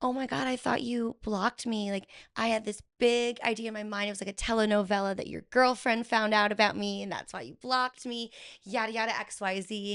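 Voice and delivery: mock playful, half-joking, tongue-in-cheek teasing. Retelling asking him why he blocked her: imitating own tongue-in-cheek question. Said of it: "I kind of tongue-in-cheek asked him".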